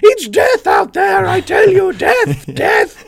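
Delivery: shrill, high, loud, slow, drawn-out squawk. Reading out Mrs. Carmody's line from the story, squawking. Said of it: "She squawked".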